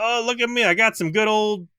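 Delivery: put-on Florida accent, very high. Playing a cloaked alien offering booze to some boys, in a Florida man accent. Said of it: "with my Florida man accent".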